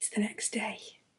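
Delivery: very soft, breathy, hushed whisper, barely voiced. Speaking to the viewers the next day, whispering. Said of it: "I don't know why I'm whispering".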